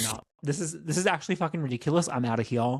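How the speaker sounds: normal talking voice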